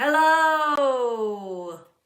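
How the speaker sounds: booming, very loud, long drawn-out delivery. Leading a group in saying hello as loudly as they can, loud hello. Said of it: "Let's say hello as loudly as we can".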